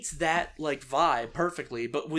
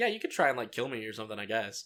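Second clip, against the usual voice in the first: play-acted casual, unbothered, smug, offhand tone; 6 semitones lower, 4 dB quieter than usual. Describing a character's reaction to a threat: imitating nonchalant Aranea. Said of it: "I like that Arani is so nonchalant about".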